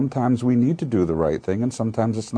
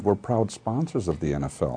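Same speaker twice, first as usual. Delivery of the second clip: ordinary talk, nothing marked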